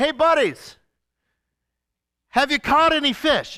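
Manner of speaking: mock teasing, sarcastic call, high and loud. Retelling Jesus calling to the disciples from the shore: imitating Jesus sarcastically. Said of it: "think about how sarcastic this is".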